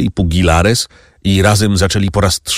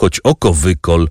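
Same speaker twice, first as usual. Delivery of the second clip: ordinary delivery, nothing marked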